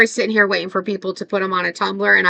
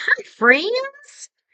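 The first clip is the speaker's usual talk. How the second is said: very high-pitched cute little voice. Describing a cooking lady she watches live, imitating her cute little voice. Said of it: "She's got the cutest little voice".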